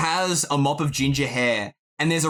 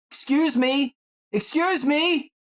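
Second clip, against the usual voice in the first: very high, slow, gradually rising call; 12 semitones higher than usual. Voicing a boy at a counter calling out: rising, calling out tone. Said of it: "in a tone that's gradually rising, and he's calling out".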